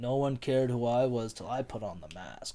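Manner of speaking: frightening villain voice. Discussing a film villain's voice, the speaker imitates how he talks: Bane voice. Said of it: "his voice is like".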